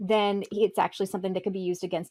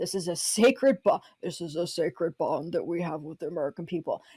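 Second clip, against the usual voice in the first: grandstanding politician's orating speech voice; 2 semitones lower than usual. Imitating a politician's threatening language: Mitch McConnell impression. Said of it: "your Mitch McConnell fucking impression".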